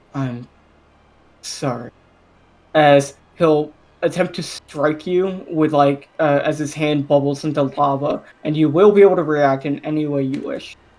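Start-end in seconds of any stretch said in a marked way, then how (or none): 0.1-1.9 very soft, hushed, barely-there half-whisper. Voicing a character who sneaks up on a sleeping player: half-whispering. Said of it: "catch him whisper".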